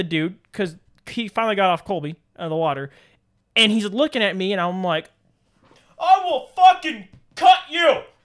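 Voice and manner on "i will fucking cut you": very high, shrill, loud screaming. Retelling a threat shouted at a man by the water: retelling a scream. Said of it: "Screaming at the guy".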